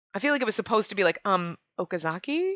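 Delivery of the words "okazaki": Okazaki said with a rising, questioning lift. Imagining how she really meant the name, rising question on Okazaki. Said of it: "Like, question mark, like, hello?".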